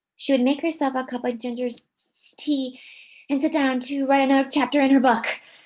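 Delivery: racing, loud reading aloud with choppy awkward breaks. Speaker demonstrating reading a passage aloud, reading way too fast. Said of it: "I read that way too fast".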